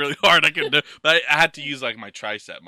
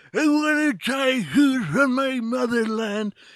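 put-on very high, gummy, toothless old man voice; 10 semitones higher than usual. Describing an imagined old man with no teeth trying food: toothless old man voice. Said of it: "You have no teeth".

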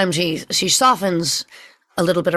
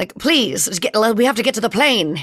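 put-on mid-Atlantic old-movie accent; 2 semitones higher than usual. Speaker demonstrates the sound of a woman's voice, old Hollywood transatlantic accent. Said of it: "it's like that old Hollywood, sound".

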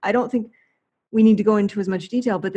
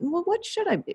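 genuinely curious, very high-pitched tone; 9 semitones higher, 6 dB quieter than usual. Showing a question asked in a curious manner: curious questioning tone. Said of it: "in a curious manner like that".

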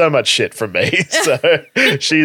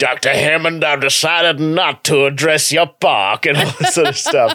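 put-on Texas cowboy-type accent. Recounting quoting Jurassic Park all day, in a Texas cowboy accent. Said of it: "in like this Texas cowboy type accent".

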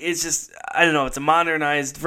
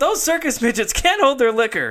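loud, high yelled-out call; 9 semitones higher than usual. Retelling a movie scene after the kids throw up: imitating a yell. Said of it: "he just yells out".

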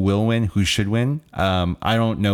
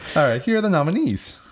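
voice cracking and breaking, pitched up; 9 semitones higher than usual. Presenter introducing the original score nominees, voice cracking. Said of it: "Why did my voice crack?".

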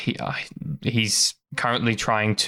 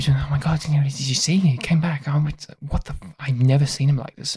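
muttering crowd voices, higher and much slower; 5 semitones higher than usual. Narrator voicing onlookers who hear labored screams, muttering crowd. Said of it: "They're just all like muttering".

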